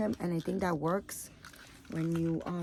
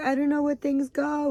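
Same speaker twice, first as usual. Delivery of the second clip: loud, high-pitched, tearful crying voice; 8 semitones higher, 7 dB louder than usual. Retelling the daughter's reply about unpacking: imitating someone crying. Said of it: "she started crying 'cause she was like".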